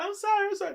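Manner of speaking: put-on, very high, loud sobbing cry. Retelling how a woman came out of the car: imitating someone crying. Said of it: "She comes out the car crying like".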